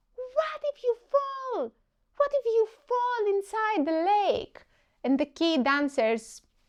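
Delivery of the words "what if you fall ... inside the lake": very high, shrill, high-pitched yelling voice. Acting out an imagined mom calling after her child: shouting. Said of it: "And Mom shouts".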